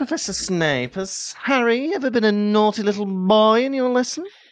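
high, nosy, prying gossip tabloid reporter voice. On a podcast, interviewing a co-host who plays Professor Snape: Rita Skeeter voice. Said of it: "you be Rita Skeeter then".

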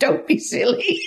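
scornful, dismissive, high-pitched and sneering. Retelling how a mother answered her child at the shop: imitating a sneering mother. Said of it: "a sneer comes across her face".

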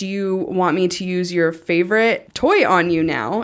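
ordinary talk

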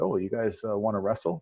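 usual speaking voice

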